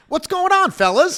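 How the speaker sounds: very high, loud, disarming friendly voice. Retelling how a client greeted a group of men: imitating a disarming, funny greeting. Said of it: "the way he said it".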